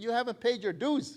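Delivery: mock bossy, scornful tone. Retelling phoning a club member about unpaid dues, imitating his own commanding, derogatory voice. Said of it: "in a very derogatory, commanding voice".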